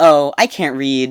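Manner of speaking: mock casual delivery. Retelling what the receptionist says when asked something: imitating a casual remark. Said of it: "So casually".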